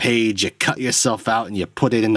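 put-on New York accent. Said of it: "I don't know why I'm doing that accent".

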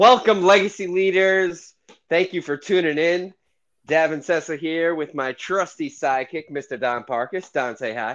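very energetic, high-energy show-opener delivery. Host opening the show, welcoming listeners and introducing his sidekick, very energetic. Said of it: "that was a very energetic welcome".

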